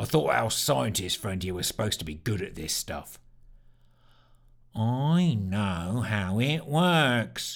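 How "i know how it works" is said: very slow, utterly gloomy, morbid delivery. Sneer answers doubts about the scientist's skill: muttered in morbid tones. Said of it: "muttered Sneer once again in his utterly morbid tones".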